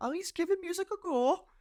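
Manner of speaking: put-on Irish woman voice. Imagining a mother telling friends about her son's music: imitating an irish mother. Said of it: "I don't know why she's Irish all of a sudden".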